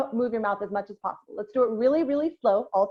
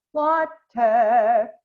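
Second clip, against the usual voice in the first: tall open vowel, mouth wide, louder; 5 dB louder than usual. Showing learners how to say the word with the mouth opened up and down. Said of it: "Up and down".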